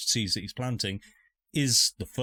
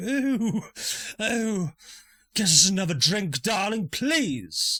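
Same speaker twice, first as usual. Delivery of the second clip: very high, small goat-like creature voice; 12 semitones higher, 4 dB louder than usual. Describing a scene where a tiny pipe-smoking goat-like creature speaks: tiny goat-like creature voice. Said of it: "tiny goat-like creature is just smoking a pipe, and you hear him go".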